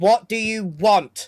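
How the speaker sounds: very loud, fed-up, impatient shout. Voicing Maximo speaking to a duck, impatient Maximo demand. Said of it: "Maximo is quite impatient. He just goes".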